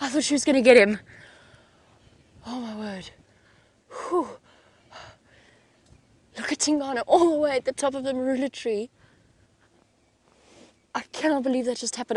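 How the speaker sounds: shaky, frightened voice. Reacting to the leopard narrowly escaping the lioness: shaking after a fright. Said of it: "I'm actually shaking".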